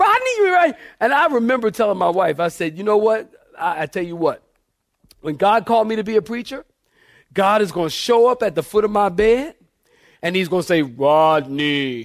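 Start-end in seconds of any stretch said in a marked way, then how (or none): 10.8-12.1 voice dropped low and stretched out. A preacher imagining God calling him to the ministry, God voice. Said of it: "That's my God voice".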